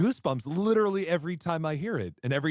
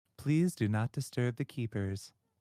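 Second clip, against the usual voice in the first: mock robotic announcer voice, lower and quieter; 5 semitones lower, 4 dB quieter than usual. Quoting a game's warning about the keepers: imitating electronic announcement voice. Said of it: "the voice for the electronic thing".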